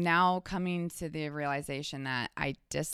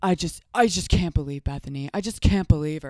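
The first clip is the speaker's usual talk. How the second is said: very loud, insistent cutting in, repeating over and over; 8 dB louder than usual. Retelling what Luann said about Bethany in a Luann voice. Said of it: "let me do a Luann voice".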